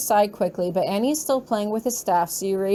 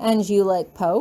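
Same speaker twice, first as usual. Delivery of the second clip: ordinary delivery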